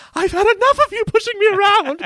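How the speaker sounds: voice cracking into a very high meltdown outburst. Retelling a scene where Number Two breaks down: imitating Number Two's meltdown. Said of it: "having a meltdown about Doctor Evil".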